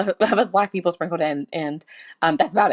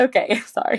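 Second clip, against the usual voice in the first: giggly, pitched up, laughing through the words; 5 semitones higher than usual. Glancing at notes before moving on, laughing while talking. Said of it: "I'm laughing".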